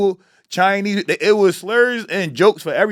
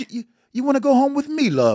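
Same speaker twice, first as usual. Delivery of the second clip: high, put-on British English accent; 6 semitones higher than usual. Retelling a woman from england who approached him after a show in philly, imitating an english accent. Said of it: "It's the accent".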